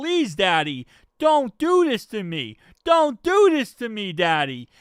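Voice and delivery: heated, pleading, begging delivery. Describing Zach Taylor arguing with the referee, mock pleading as Zach Taylor. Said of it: "He is pleading his case".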